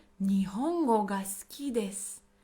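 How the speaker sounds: plain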